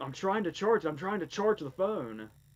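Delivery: screamed loudly, high-pitched. Retelling a film scene where one character screams back at another: imitating someone screaming. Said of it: "And Bob screams at him".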